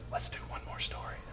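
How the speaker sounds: very soft, hushed whisper. Retelling how Esther asked for one more story: imitating Esther's whisper. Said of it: "Esther just whispers".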